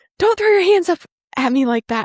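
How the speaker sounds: play-acted, high-pitched scolding yell, coach style. Retelling being yelled at by the coach: imitating Shannon yelling. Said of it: "never been yelled at like that by her".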